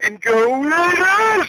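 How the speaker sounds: high, hyped, drawn-out cheer.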